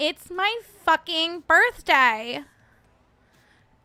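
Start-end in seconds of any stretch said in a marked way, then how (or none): 0.0-2.4 high, slow, loud, stretched-out whine. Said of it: "As Stassi Schrodinger would say".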